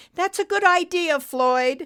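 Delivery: voice breaking and cracking, pitched very high. A narrator reads a character's reply to floyd over the radio, voice cracking. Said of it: "Betty's voice cracked over the radio".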